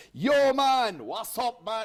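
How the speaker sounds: put-on drawn-out Jamaican voice and accent. Mimicking a friend's voice when he wasn't around, in a Jamaican accent. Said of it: "He heard me doing his Jamaican accent".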